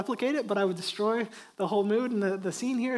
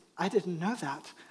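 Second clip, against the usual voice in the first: mock dead serious, matter-of-fact, low deadpan delivery; 4 semitones lower, 5 dB quieter than usual. Retelling a young daughter's reply after a ninja claim: imitating a deadpan serious reply. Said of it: "deadpan serious".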